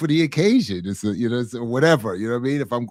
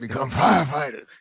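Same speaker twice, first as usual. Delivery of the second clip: rough raspy fake voice. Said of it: "in that raspy voice".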